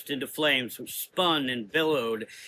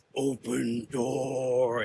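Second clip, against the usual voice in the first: deep, growling creature voice, door drawn out. Narrator reading fiction, voicing the creature's command: deep booming growl. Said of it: "it growled in a deep, booming voice".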